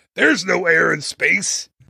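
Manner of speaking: put-on heavy Texan accent. Retelling a TV scene, quoting the warden replying to Homer, thick Texas accent. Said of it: "he has a really thick Texas accent".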